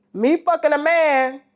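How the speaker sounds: ordinary talk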